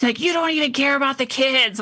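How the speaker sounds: put-on high, heated, furious, angry shout. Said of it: "he starts yelling at me".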